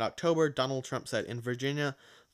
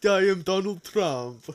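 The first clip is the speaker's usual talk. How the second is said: put-on Russian-sounding accent, higher and louder; 6 semitones higher, 7 dB louder than usual. Imitating Donald Trump while joking about his tweets: Donald Trump impression sounding Russian. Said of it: "That is Russian".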